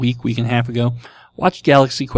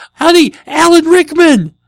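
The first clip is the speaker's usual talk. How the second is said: very loud, high, far-carrying yell; 10 dB louder than usual. Speaker retells yelling out to his wife from the bathroom, retelling a yell. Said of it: "I yelled out to my wife".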